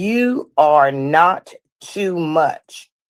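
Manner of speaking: very slow, deliberate delivery.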